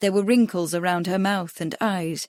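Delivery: ordinary delivery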